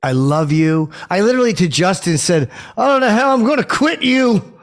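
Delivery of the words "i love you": heartfelt, slower. Asked to repeat a line with more heart, saying it with more heart. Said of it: "Could you say it like you said it to Justin Gaethje with more heart".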